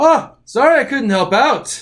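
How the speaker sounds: put-on loud, high-pitched Irish accent.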